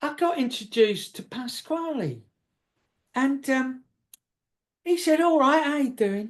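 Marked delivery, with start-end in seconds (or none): 5.2-6.3 put-on jovial, buoyant, quick South East London accent. Retelling being introduced to Pasquale in the queue, South East London accent. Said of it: "delightful South London, South East London accent".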